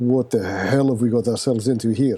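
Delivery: muttering under breath. Playing a soldier at a dark camp, muttering under breath. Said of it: "I think I mutter under my breath".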